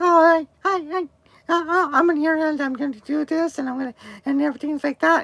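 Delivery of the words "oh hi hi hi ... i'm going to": put-on chipmunk-like voice, higher. Imitating interviewees whose audio sounded like a chipmunk: imitating chipmunk-sounding voices. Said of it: "kinda sound like a chipmunk".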